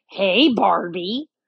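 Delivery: menacing fake villain voice. Retelling how a man walked up to a young woman as a joke, scary Joker voice. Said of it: "he goes in the scary Joker voice".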